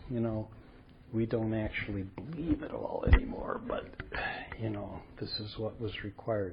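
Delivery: hushed confiding voice. Speaker retells what others admitted to him, in a lowered voice. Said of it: "say in a lower voice".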